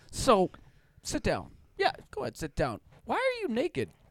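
very high, patronizing, condescending scolding tone. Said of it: "It's super like dad is lecturing you".

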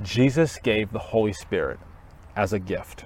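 very slow, deliberate, carefully spaced words. Speaker asks listeners to listen carefully and says the next point slowly. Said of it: "listen carefully as I say this slowly".

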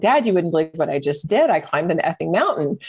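normal talking voice

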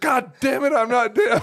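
put-on very high, loud, crotchety, angry old-man outburst. Retelling how a hard-of-hearing old man reacted to being yelled at, imitating an angry old man. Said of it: "Dude gets angry".

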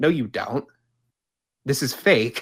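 mock exasperated, incredulous disbelief. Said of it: ""You have got to be shitting me," ... voice ever".

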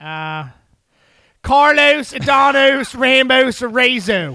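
Baltimore-sounding accent. Asked to say a full name in a Baltimore accent, giving it a try. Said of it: "can you say all that in a Baltimore accent".

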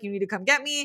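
put-on frightened, panicked tone. Retelling a character calling for a ride: imitating a panicked plea. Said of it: "in a panic and is like".

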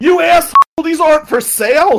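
shrill, very high, very loud screaming. Retelling how a card seller screamed at the speaker: imitating a man screaming. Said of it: "he screams at me".

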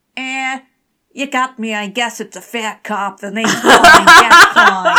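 high, very loud, belted attempted New Jersey accent. Telling the story, voicing the character's reply to the god of war, attempted New Jersey accent. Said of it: "This attempted New Jersey accent".

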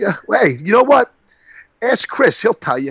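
clumsy put-on New York accent. You are acting out a politician's answer about pulling out of Atlantic City, in a bad New York accent. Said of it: "he did a bad New York thing".

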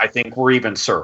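ordinary talk

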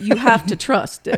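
put-on cartoon rooster drawl. Retelling advice a senator gave on the phone: Foghorn Leghorn voice. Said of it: "Foghorn Leghorn voice".

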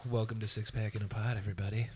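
low, soft public radio announcer voice. A host welcomes everybody to the show in an NPR radio voice. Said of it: "Why do you sound like you're on NPR again?".

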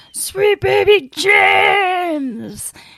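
very high, loud shouted yell. Retelling a concert where a fan called out: imitating a fan yelling. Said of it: "fan yelled out".

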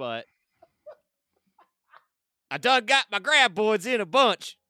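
put-on old-timey prospector accent. Playing Tremors with friends, slipping into an old-timey prospector voice. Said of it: "talk like an old timey prospect".

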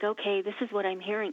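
ordinary delivery

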